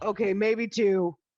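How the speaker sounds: shouting. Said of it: "you hear a voice yell from the outhouse".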